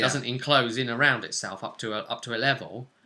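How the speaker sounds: ordinary talk, nothing marked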